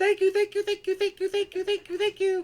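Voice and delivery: tiny, very high, loud, excitable, hyper gushing voice. Describing to the players how a small character sounds: imitating a very little hyper voice. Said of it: "this very little, like, hyper voice go".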